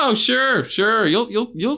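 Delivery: high-pitched, loud, sarcastic, teasing delivery.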